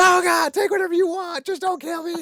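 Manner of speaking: very high, shrill, loud screaming. Recapping a cartoon episode to co-hosts, the speaker acts out Roger's scream. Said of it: "And then Roger screams".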